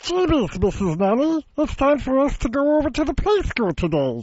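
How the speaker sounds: high, funny character voice. Guest showing the hosts a voice he does, Bunsen from Muppet Babies voice. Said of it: "I do Bunsen from Muppet Babies".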